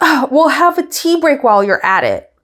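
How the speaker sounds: high-pitched, sassy quip. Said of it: "So much sass".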